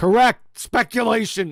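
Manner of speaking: put-on two words in a New York accent. Repeating another speaker's words back: imitating a new york accent. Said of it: "in that New York accent".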